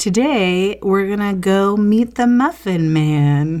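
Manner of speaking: eerie, unsettling. A podcast host introduces today's episode, creepy-sounding. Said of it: "It sounded creepy".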